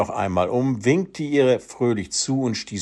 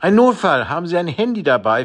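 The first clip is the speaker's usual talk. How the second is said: panting, gasping, out of breath, pitched-up; 6 semitones higher, 4 dB louder than usual. Narrator reads a man rushing up to a dog owner, panting. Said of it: "fragte er keuchend".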